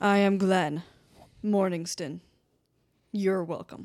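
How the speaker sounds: slow, dramatic, theatrical, brooding, grand delivery. Voicing a pale stranger who dramatically sits down and introduces himself: dramatic angsty character voice. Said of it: "He kinda, like, dramatically sits down".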